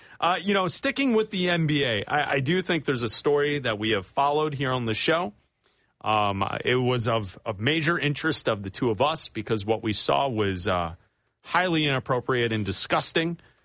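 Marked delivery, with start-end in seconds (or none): none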